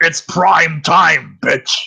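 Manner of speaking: rough, loud, drawn-out villain. Answering a request to do a voice: Freddy Krueger voice. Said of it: "They want you to do the Freddy Krueger voice".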